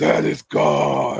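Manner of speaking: gruff, angry, drawn-out delivery. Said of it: "You sounded angry".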